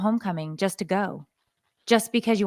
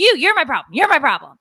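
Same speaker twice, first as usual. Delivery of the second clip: heated, loud, shrill screaming; 6 semitones higher, 8 dB louder than usual. Retelling a screaming match, voicing the son: imitating a son screaming. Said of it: "we're screaming at each other".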